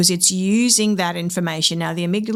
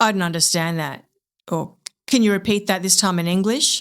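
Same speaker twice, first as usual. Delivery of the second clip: mock abrupt, cold, curt, clipped tone. Acting out what someone says at a meeting's start, in an acted abrupt, cold, clipped tone. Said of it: "says in a very abrupt, cold, clipped tone of voice".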